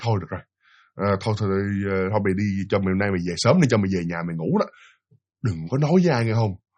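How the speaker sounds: low, soft, sad, resigned murmur. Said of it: "Buồn dữ lắm luôn".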